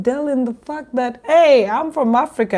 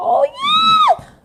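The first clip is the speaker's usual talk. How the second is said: put-on very high shriek with yeah drawn out; 3 dB louder than usual. Retelling how a guy on the street screamed at them: imitating a guy screaming.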